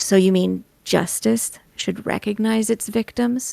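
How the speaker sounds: seething, grating fury, very angry, rough creaky voice. A mysterious voice speaks right against Adriel's ear: soft, very angry voice. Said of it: "in a soft, very angry voice says".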